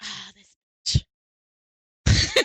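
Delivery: fed-up, put-out, annoyed delivery. Retelling how a friend reacts when she shows up: imitating Bill. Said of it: "he's like".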